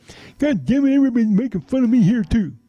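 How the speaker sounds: very high, joking, clowning voice. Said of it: "and John talked like this".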